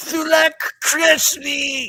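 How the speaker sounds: very high-pitched, shrill yelled cry. A game master voices an enemy calling out after an arrow hits him, shouting. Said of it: "You hear him shout".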